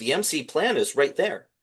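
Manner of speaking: acted screaming. Retelling own reaction while watching the show: retelling own screaming. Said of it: "I was screaming".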